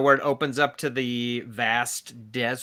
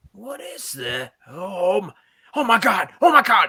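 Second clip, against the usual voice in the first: put-on loud, high drunken man's voice; 7 semitones higher, 5 dB louder than usual. Game master voices a man in the shack when the chicken is set in, drunken man's voice. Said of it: "you can hear a man's kind of drunken voice like".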